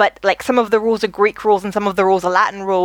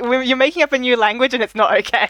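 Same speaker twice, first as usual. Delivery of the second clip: normal talking voice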